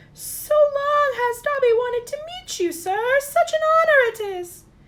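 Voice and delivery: shrill, loud, high-pitched, carrying voice. Narrator reads the creature greeting Harry Potter, in a high-pitched Dobby voice. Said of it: "the creature in a high-pitched voice".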